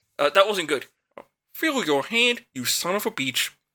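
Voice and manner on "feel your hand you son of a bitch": slow, pitched-up, drawn-out frog puppet voice. Asked by a friend to do a famous puppet's voice, the speaker tries the line again in it. Frog puppet voice. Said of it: "Say the line in Kermit's voice".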